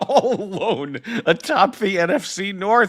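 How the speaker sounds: very high, words breaking into laughter. Talking football with Dan, laughing while speaking. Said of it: "I'm sorry for laughing".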